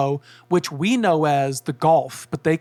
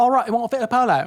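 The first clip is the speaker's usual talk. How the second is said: put-on South African accent, higher; 7 semitones higher than usual. Retelling what a car rental clerk in South Africa said: imitating a South African accent. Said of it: "There's an accent".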